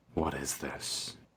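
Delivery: very calm, soft voice with frustration showing through. The Veiled Raven reaches the party and clasps her hands; calm but frustrated voice. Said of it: "in this very calm, but you can tell, like, frustrated voice goes".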